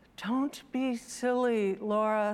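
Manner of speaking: ordinary delivery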